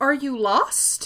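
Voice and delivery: acted-out stammering with fear, trembling and stuttered. Retelling asking the ghost girl a question: imitating a fearful stutter. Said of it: "I'm very stuttered".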